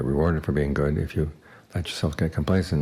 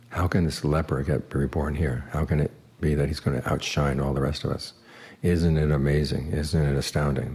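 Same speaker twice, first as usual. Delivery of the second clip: ordinary delivery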